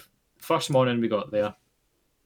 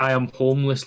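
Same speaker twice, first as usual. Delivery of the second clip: normal talking voice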